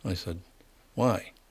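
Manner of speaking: normal talking voice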